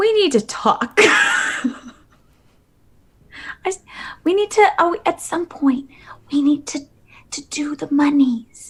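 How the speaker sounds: soft, halting whisper under the breath. Telling another character that they need to talk about money: whispering. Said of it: "I'm whispering to Deirdre".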